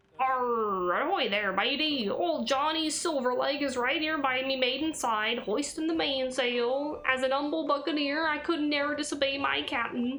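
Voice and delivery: slow, fake, swashbuckling put-on pirate voice. Playing a humble buccaneer addressing a matey, in a put-on pirate voice. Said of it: "I don't know what the fuck I'm doing with this voice".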